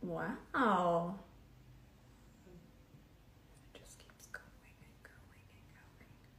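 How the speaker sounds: quiet whispering. Blending concealer into the skin and watching it spread: whispering. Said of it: "Why are we whispering?".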